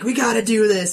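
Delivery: mock high-pitched screaming, in character. Retelling another player screaming at them in character, imitating someone screaming. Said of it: "he's screaming at me".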